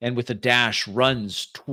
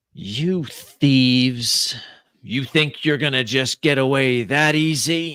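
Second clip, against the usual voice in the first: metallic voice with echo; 3 dB louder than usual. Voicing a presence in a vault confronting thieves, metallic echoing voice. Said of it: "A metallic voice echoes through this large cavern".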